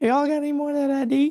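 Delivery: very high-pitched sketch-comedy crackhead voice. Joking about a donation message, doing the Chappelle's Show crackhead bit. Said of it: "I like doing the, uh, Chappelle show side".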